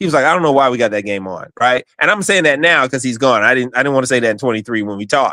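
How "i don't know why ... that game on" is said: mock exasperated huffing, lower. Retelling someone's reaction to a game being scheduled: imitating an exasperated huffing complaint. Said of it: "huffed and puffed".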